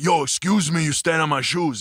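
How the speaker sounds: Dominican man's way of speaking. Retelling another Dominican guy's club story: imitating his way of talking. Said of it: "He talks like this".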